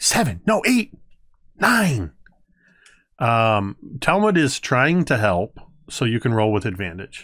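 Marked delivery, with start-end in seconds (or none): 0.0-2.1 tiny, squeaky, high, bouncy sing-song voice. The storyteller voices Talmud, who is trying to help with the roll: tiny voice. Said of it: "you just hear this tiny voice going".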